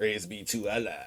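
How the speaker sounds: very quiet, hushed, scornful sneering tone. Imagining how the president said the line, imitating a sneering delivery. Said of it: "I imagine him saying it with a sneer".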